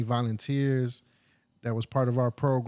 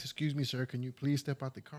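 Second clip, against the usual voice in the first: courteous, nice, polite officer-like voice; 8 dB quieter than usual. Retelling how police spoke after coming home: imitating cops talking all nice. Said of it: "they're talking all nice".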